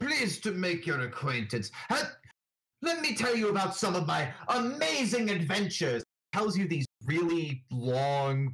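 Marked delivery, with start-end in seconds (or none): 0.0-6.0 very refined, posh gentleman's voice, a touch higher. Describing a boastful gentleman character introducing himself, posh Sir Robert Harrow voice. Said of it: "posh sort of gentleman".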